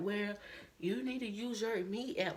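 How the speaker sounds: acted-out, heavy sarcasm with attitude. Retelling what a lady with an attitude said: imitating a sarcastic tone. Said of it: "she was being sarcastic".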